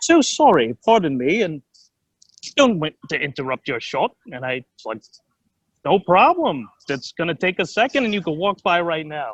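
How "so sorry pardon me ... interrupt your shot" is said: put-on English accent. Retelling what a passerby said to him, in an english accent. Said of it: "I hear this English voice".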